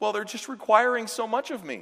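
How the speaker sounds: very high, weepy, tearful crying. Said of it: "and he's crying".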